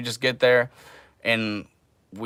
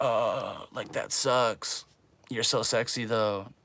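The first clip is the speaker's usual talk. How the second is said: soft, slow, mock drawl. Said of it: "what's that meme about, like, the guy who's like".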